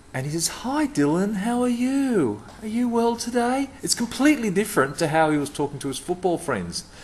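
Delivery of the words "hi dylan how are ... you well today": very high, slow, carefully spaced-out words. Retelling a footballer kneeling to greet the speaker's son, imitating very slow, deliberate speech. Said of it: "a very slow, deliberate voice".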